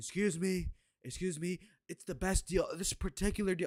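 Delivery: slow, unhurried. Showing how a relaxed candidate never speeds up: slow unhurried Trump impression. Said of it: "he talks in his own pace".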